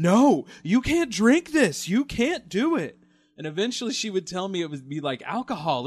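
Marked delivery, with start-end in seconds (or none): 0.0-3.0 high, loud, frantic, no drawn out. Imitating a mom stopping a child from drinking vanilla: imitating a mom freaking out. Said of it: "my mom would freak out every time".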